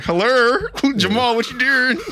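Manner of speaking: very high-pitched put-on character voice. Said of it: "what if Tyler Perry start using his Medina voice? He's like".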